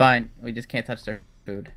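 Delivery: ordinary delivery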